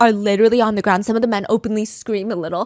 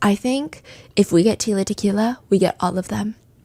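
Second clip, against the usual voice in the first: hushed whisper. Retelling what another man discreetly said, whispering. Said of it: "and he whispers".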